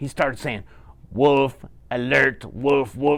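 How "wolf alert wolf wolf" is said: slow, robotic, announcement-style robot voice. Telling a big bad wolf story, the robot sounding its wolf alarm, in a robot voice. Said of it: "in a robot voice like this".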